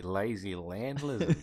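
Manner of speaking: put-on Australian accent. Describing the tuatara lizard, Australian accent. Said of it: "I'm doing an Australian accent".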